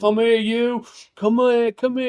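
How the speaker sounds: loud, high, charming calling. Retelling a bar scene from the film: Robert De Niro impression. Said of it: "that is Robert De Niro in a nutshell".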